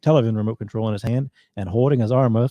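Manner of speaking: ordinary delivery, nothing marked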